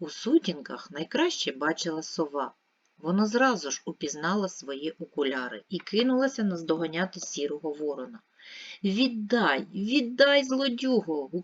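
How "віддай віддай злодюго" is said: loud, high shout at full cry. The owl chases the grey crow that took her glasses: shouted. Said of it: "гукнула сова".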